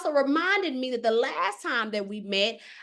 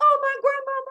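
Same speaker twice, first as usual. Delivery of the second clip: mock very high, tearful crying voice; 12 semitones higher, 4 dB louder than usual. Speaker recounts a grandmother's spirit visiting; retelling own crying. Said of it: "And I'm in crying like".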